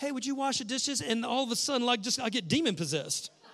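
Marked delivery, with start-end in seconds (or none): 0.0-1.0 acted, super sweet, sugary tone. Retelling being asked to wash the dishes, imitating Chrissy's sweetest tone. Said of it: "sweetest tone ever".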